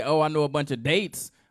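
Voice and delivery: ordinary talk, nothing marked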